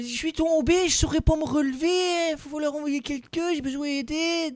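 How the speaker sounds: put-on Belgian accent. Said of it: "plein d'accents belges".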